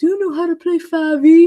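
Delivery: high, cartoonish puppet voice. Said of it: "none of them talk like a Muppet".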